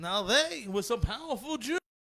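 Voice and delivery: put-on accent with Yiddish inflection.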